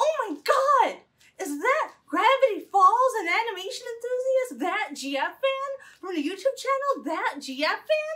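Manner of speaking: high, gasping, sheerly astonished exclamation. A host suddenly spotting a fellow fan channel creator, gasping in surprise.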